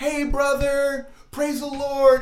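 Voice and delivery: high, drawn-out, loud yell. Retelling a girl from Bible college yelling at him across the bus. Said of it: "she'd be yelling at him".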